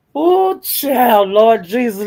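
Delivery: slow, laughing through words, broken by laughter. Joking with viewers about putting hexes on people, laughing while talking. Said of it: "let me stop laughing".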